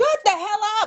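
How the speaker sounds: shrill, very high, loud scream. Retelling own reaction to a video, imitating own screaming at TV. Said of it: "that's what she was screaming at the T V".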